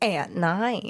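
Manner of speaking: unusual phrasing of "at night". Adding a tag line to the podcast intro: odd delivery of "at night". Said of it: "why did you say it like that?".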